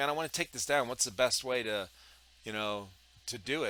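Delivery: ordinary delivery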